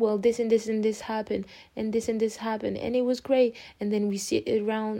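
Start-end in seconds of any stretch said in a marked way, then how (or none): none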